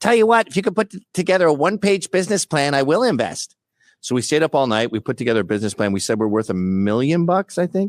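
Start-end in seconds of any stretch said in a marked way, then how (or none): 0.0-3.6 geeky, nerdy voice, pitched high. Retelling what a buyer's son told the speaker, in a nerdy voice. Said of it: "He had like a nerdy voice".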